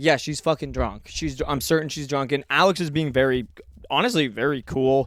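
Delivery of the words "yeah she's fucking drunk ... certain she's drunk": ordinary talk, nothing marked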